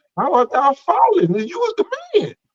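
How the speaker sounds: very high, swooping, mocking sarcastic jeer. Retelling a scripture question to another speaker, voicing the Lord sarcastically.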